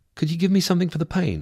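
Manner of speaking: very high-pitched, simple delivery. As a nurse dresses the speaker's wounded arm, the speaker asks quietly. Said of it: "I asked quietly".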